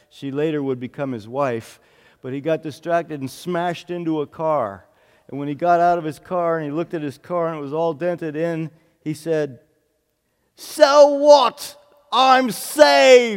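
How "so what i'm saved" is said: put-on very loud, shrill, drawn-out, high booming British accent. Retelling what he said after smashing into a car, imitating a british accent. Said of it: "In his great British accent".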